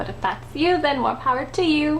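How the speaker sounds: insincere, put-on pleasant tone. Finishing an opinion on makeup, sounding fake and insincere. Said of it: "So that sounded really fake".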